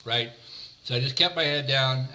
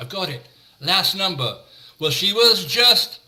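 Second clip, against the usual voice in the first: put-on Liverpool accent, pitched up high; 6 semitones higher, 8 dB louder than usual. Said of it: "in his famous Liverpudlian accent".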